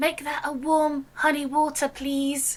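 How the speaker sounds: leaned-in, quiet half-whispered aside. A character leans over to the bartender after a loud order: half-whispering. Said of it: "lean over and whisper".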